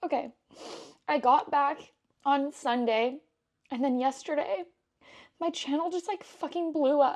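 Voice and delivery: voice breaking, choking up. A creator telling viewers about their channel, teary, choking up. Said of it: "I'm crying. I'm crying".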